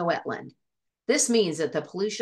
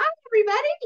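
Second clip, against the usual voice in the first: very high, loud, squeaky cartoon voice; 5 dB louder than usual. Asked about a fish character's voice, speaker demonstrates Ajax's high squeaky voice. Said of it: "Ajax has kind of a high pitched, squeaky voice".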